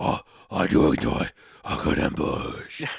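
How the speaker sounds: very low, deep, husky stage whisper. Redoing a co-player's line the way Batman would say it: husky Batman whisper. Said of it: "speaking in a husky whisper".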